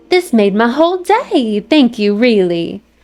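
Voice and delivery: put-on Southern accent. Voicing the character thanked for a gift: Southern belle voice. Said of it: "Southern Belle with her".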